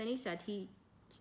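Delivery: ordinary delivery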